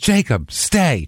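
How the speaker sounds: acted dog-command voice. Retelling how she told Jacob to stay, quoting it like a dog command with a pause. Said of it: "the pause in it is exactly what you would tell a dog".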